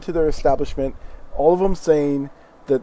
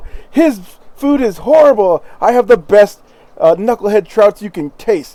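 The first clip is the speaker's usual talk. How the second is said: very loud, high-pitched shout; 7 semitones higher, 9 dB louder than usual. Voicing a dwarf who shouts to passing travellers: dwarf merchant shouting. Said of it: "You just hear them shouting over each other".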